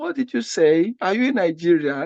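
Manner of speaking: ordinary delivery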